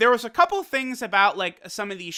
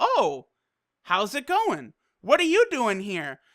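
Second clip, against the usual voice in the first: put-on calm voice, slower; 5 semitones higher than usual. Describing Frieza's reaction when Goku shows up: calm, casual Frieza impression. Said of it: "Frieza is very calm throughout this whole thing".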